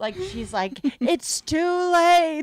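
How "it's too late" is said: very high-pitched, loud villain-style yell. Acting out Mrs. Robinson's one interaction with the other woman, yelling like Jafar. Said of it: "Robinson yelling like she's fucking Jafar".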